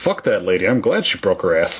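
ordinary delivery

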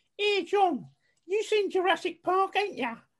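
put-on Essex accent, pitched very high. Retelling what Sarah said to John, doing her Essex accent. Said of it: "I'm going to do her accent for you".

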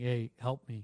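normal talking voice

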